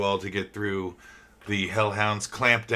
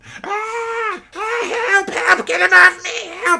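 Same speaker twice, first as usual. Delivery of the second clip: very high, very loud, frantic panicked shrieks; 11 dB louder than usual. Game master voicing a goblin being bitten by a hellhound: screaming goblin. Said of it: "you can hear and see a goblin screaming, being bitten by a hellhound".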